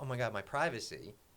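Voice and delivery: ordinary talk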